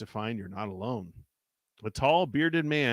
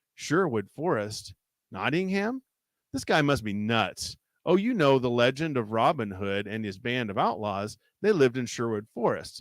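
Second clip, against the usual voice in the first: ordinary delivery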